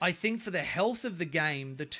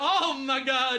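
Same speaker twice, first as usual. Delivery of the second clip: way too loud, high-pitched outburst; 7 semitones higher, 5 dB louder than usual. Reacting to a toy lion shown to the baby, too loud. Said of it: "too loud".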